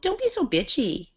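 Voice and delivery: put-on snippy, catty, very high girlish voice. Discussing who says that phrase in that tone, imitating a girl's tone. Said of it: "Guys don't use that tone".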